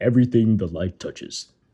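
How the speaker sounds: very deep put-on voice. Asked for a deeper impression, the speaker does a Mufasa voice. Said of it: "I impressed myself with that one".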